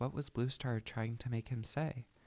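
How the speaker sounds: usual speaking voice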